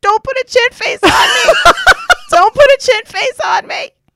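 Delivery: sobbing, tearful, high, loud crying wail. Retelling how the husband cried handing back a pen: imitating someone crying. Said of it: "he started crying".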